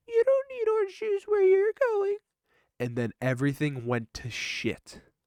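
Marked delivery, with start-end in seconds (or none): 0.1-2.1 squeaky, tiny, very high elf voice. Retelling a trip, the speaker voices what they heard in a little elf voice. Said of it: "all I heard was this little elf voice say".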